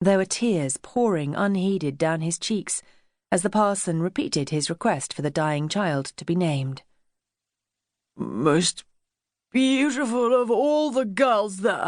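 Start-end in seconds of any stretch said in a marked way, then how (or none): 8.2-11.9 slurred, slow, pitched-up, words running together. Reading a grieving lord's words at his wife's deathbed: slurred muttering. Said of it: "Lord Kenilworth was muttering, his words so slurred".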